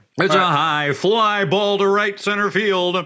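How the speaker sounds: drawn-out, high, play-by-play baseball announcer voice. Saying he was meant to be a baseball announcer: imitating a baseball announcer. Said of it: "to be a baseball announcer".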